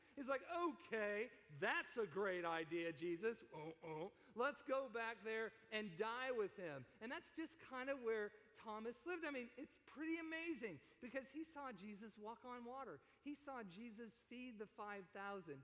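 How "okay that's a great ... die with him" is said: mock dramatic, heavy, theatrical sarcasm. Retelling what he said about going to Bethany: acting out sarcastic remark. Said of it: "And I think he was very sarcastic".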